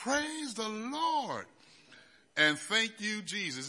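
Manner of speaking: mock jubilant high shout, "Lord" drawn out. Speaker recalls learning the school would refund the money, retelling a scream. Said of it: "I remember screaming out loud".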